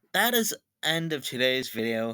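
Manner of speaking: ordinary talk, nothing marked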